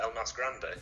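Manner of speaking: British English accent on El Mas Grande. Asked to say the nickname in a British accent, English accent. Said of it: "with an English accent".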